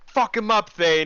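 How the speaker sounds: very high, hyped-up, excited shout. Cheering a player's critical hit in a tabletop game, excited yell. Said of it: "I'm just yelling that out".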